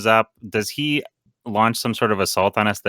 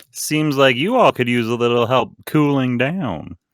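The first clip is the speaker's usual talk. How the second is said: American southern accent, put-on, lightly delivered; 4 semitones higher than usual. Playing the creep with an ice cream truck, speak in a southern accent. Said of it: "Is he is he a southerner now?".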